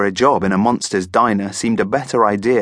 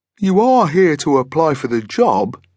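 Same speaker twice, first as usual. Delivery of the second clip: unsure, hesitant, pitched-up monster voice; 6 semitones higher than usual. Reading a story aloud, the monster blinks and speaks, uncertain. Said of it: "he said uncertainly".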